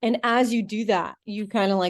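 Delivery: ordinary delivery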